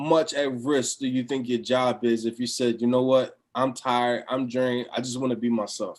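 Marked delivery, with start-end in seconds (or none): none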